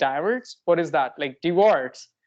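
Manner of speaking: normal talking voice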